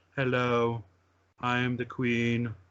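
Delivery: very slow, flat, droning queenly monotone. Imitating the queen introducing herself: flat monotone queen voice. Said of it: "the queen with her monotone voice".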